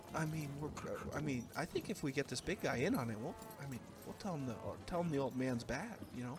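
whispered delivery in a put-on voice. Voicing a character who whispers back to a player: whispering in character. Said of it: "he whispers back to you".

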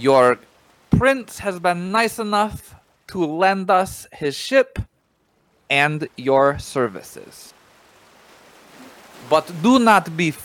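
projecting the voice loudly. Voicing a prince's heir addressing the crew from the ship: speaking up loudly in character. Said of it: "I'm going to speak up".

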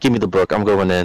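fed-up, annoyed, decided tone. Retelling losing patience with hesitant teammates: imitating own annoyed self. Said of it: "I would get so pissed".

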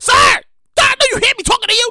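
upset, very high-pitched. Retelling a bus driver calling to a passenger: imitating an upset bus driver. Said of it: "the bus driver's upset".

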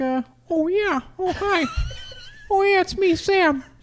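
very high voice with pitch swooping around. Asked for an impression Sam could use, speaker tries a Kermit the Frog voice. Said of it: "Using a Kermit the Frog voice".

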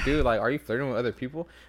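ordinary talk, nothing marked

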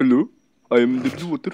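put-on, attempted Indian accent. In a voice chat, asking who can do an Indian accent, then trying one. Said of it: "can do like a literal on-point Indian accent".

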